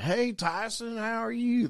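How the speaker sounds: exaggerated Oklahoma accent, high-pitched. Telling a story about Nate greeting a woman, in a bad Oklahoma accent as Nate. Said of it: "This is the worst accent ever".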